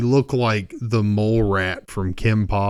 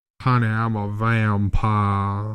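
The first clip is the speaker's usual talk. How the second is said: put-on Southern accent, lawyer voice. Retelling a man who claimed to be a vampire, quote him in a southern lawyer voice. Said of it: "he talked like a, a fucking Southern lawyer".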